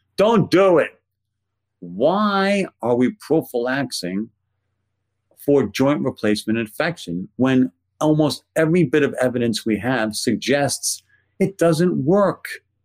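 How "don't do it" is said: best-effort put-on Brooklyn accent, pitched up. Speaker sums up what the professional organizations say, in best Brooklyn accent. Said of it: "in my best Brooklyn accent".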